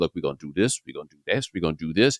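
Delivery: big, deep voice with presence, dropped low. Retelling how a big teacher addressed his boys, imitating a teacher's deep voice. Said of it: "A deep voice. He'd be like".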